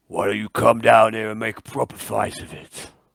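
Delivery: low guttural orc speech. Game master voicing an orc that glowers at Arnold, guttural low orc voice. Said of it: "the orc speaks in its guttural, low".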